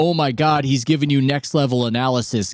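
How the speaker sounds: ordinary talk, nothing marked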